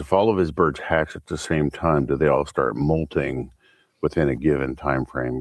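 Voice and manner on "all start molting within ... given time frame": normal talking voice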